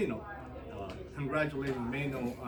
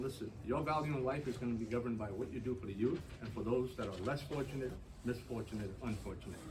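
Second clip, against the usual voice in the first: plain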